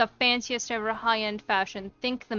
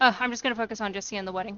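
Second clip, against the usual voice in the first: normal talking voice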